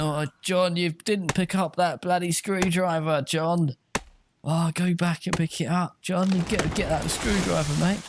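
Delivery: put-on high, impatient, nagging voice. Retelling how another chat talked to the player: imitating an impatient chat. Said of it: "they're going".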